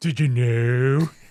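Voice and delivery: low monotone voice. Imitating a wrestling colleague called Dream Smasher: Tommy Dreamer monotone impression. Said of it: "Very monotone, very Eeyore".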